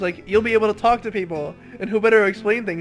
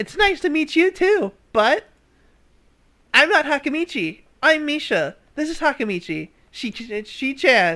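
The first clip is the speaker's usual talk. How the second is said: put-on bubbly girl voice, higher; 5 semitones higher than usual. Reading a visual novel aloud, voicing the bubbly pink-haired girl: Misha voice. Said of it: "I guess I have to do this voice?".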